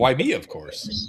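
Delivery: resplendently self-satisfied, grand, drawn-out, self-important tone. Voicing the robed man answering what the well-to-do look like: resplendent, self-important reply. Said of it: "resplendently looks before you and just kind of like".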